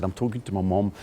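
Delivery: normal talking voice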